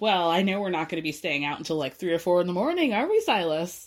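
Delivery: play-acted sly, knowing, sarcastic needling tease. Retelling a conversation about a guys' night, imitating Jordan's sly sarcasm. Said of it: "very slyly, sarcastically goes".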